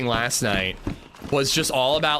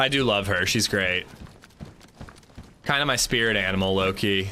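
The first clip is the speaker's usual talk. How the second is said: ordinary delivery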